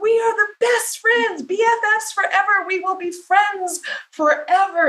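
put-on very high three-year-old little-girl voice. Retelling a woman's childhood vow to the plants: imitating a three-year-old girl. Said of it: "she's a little three-year-old going".

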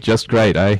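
fake Australian or New Zealand accent. Playing the London correspondent Jeremy Satchwell, in a bad Australian-Kiwi accent. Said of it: "totally went Australian and Kiwi there".

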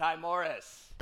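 loud, authoritative, commanding call. Retelling how a man called the speaker's name across a room: commanding voice. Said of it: "in this commanding voice".

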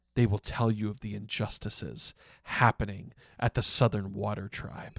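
mock quiet, serious delivery. Retelling how a man leans in close to speak: imitating quieter, serious delivery. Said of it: "he gets quieter and more serious".

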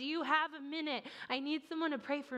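put-on tearful man's yell. Retelling a man bursting in, crying, asking for prayer: imitating a tearful man yelling out. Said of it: "he practically yells out".

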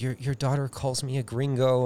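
flustered, nervous, dweeby little schoolteacher voice. Parent recalls to their daughter a meeting with her teacher, imitating a nervous teacher. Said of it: "he was like all nervous".

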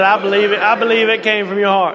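plain

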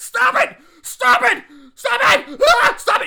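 frantic, crazed, shrill, very high, very loud, drawn-out yelling. Acting out an actor going crazy in a commercial scene, imitating crazed yelling. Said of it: "He starts yelling".

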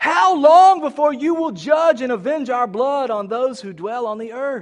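loud, high crying out. Acting out a crowd crying out to the Lord, crying out loudly. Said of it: "They cried in a loud voice".

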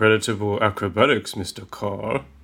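normal talking voice

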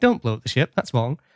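normal talking voice

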